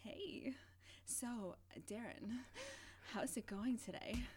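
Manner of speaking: put-on sultry, sexy phone-line voice. Trying out a little voice like the 1-900 numbers: put-on sexy voice. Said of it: "Maybe I could like do a little voice, like a sexy voice. Like the 1-900 numbers".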